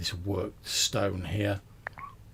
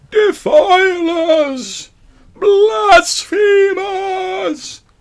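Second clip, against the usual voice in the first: very high, loud, very slow, mournful wail. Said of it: "screaming in a similar vein".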